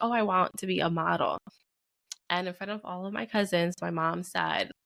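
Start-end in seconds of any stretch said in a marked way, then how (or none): none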